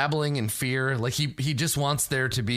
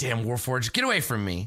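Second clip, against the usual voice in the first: snarling, lashing-back delivery. Game master voicing a wounded character who snarls at a player: snarling. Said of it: "And snarls at you like".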